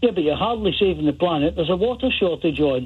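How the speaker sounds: plain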